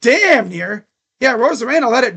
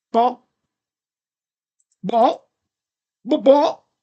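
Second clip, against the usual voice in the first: each "ball" clucked like a hen. Commenting on a string of balls in a game, sounding like a chicken. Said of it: "Sound like a chicken".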